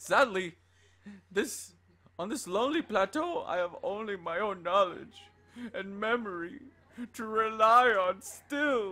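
weepy, mournful, high lament. Reading a game diary aloud as the writer Old Daddy: tearful voice of Old Daddy. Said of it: "There's tears all over the diary".

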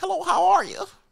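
polite business phone voice. Showing the voice the speaker would put on for business calls, business call voice. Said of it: "I could put on my business call voice".

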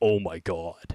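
voice dropped very low, sunk exclamation. Reacting to finding a leash in Minecraft: unusually low voice. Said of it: "Why'd my voice go that low?".

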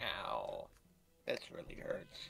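mechanical, creaky, swooping robot voice. Playing a game with friends while getting hurt, in a robot voice. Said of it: "I love your robot voice".

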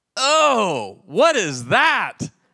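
very slow, loud, drawn-out put-on American accent, long oh. Warning future missionaries how not to react to food served abroad, best american voice. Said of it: "in the best American voice you can go".

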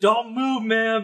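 high, drawn-out calling voice.

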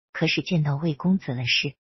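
plain

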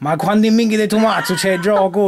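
put-on old man voice with Sicilian accent. Retelling what an old sicilian customer at the bakery said: imitating an old sicilian man. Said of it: "He's like".

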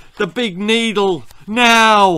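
high, urgent shout stretched out long. An ambulance man kneeling over a boy who says he's dying: shouting. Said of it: "shouted the ambulance man".

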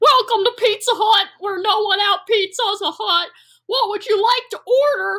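voice cracking. A narrator voices a waiter greeting a customer at Pizza Hut, cracking voice. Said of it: "his still cracking voice asks".

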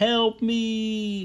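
tiny, eerie, creepy little voice, very high. Speaker describes a film scene where a trapped fly calls out, tiny creepy fly voice. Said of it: "That tiny little creepy voice".

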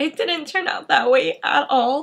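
holding back tears. Telling about applying to nursing school a second time, holding back tears. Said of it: "I'm trying not to cry".

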